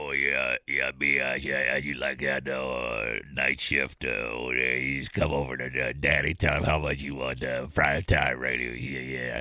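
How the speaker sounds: very low, fumbling, halting ramble full of fillers. Recalling a co-host's old bit: imitating the fat sweaty program director. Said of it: "your impression of the fat sweaty program director".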